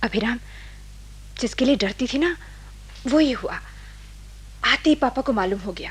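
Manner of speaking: quiet, hushed, soft voice under the breath. On the phone while her father is listening, speaking softly so Papa won't hear. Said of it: "मैं धीरे धीरे बोलूंगी, पापा सुन रहे हैं".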